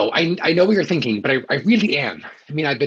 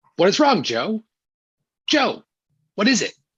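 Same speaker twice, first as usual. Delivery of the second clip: rehearsed put-on outrage and shock, pitched up, swooping; 6 semitones higher than usual. Rehearsing a reaction before someone enters: rehearsing fake outrage and shock. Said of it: "trying to rehearse his outrage and shock".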